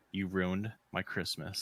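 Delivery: mock dead-serious, straight, serious delivery. Retelling what a lady said to her over late deliveries, imitating a serious tone. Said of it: "she just straight said with a serious tone".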